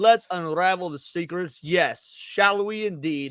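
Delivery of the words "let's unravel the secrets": ordinary talk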